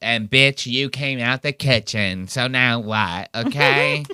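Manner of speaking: teasing, ribbing, mocking tone. Retelling a comeback from a roast, mocking impression of Tony. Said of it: "he goes".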